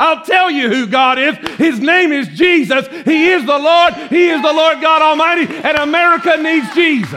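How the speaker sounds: preacher voice. Pastor declaring to the church, yelling. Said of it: "you're yelling, Yes, I am".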